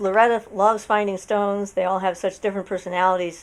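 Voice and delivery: ordinary talk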